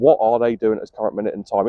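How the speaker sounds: usual speaking voice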